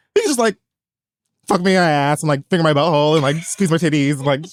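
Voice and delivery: ordinary talk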